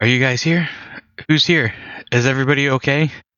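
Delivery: panicked, disoriented, frantic, high calling out. Voicing a character who wakes in panic and searches the house: panicked yelling. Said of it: "start yelling".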